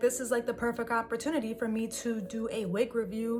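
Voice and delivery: ordinary talk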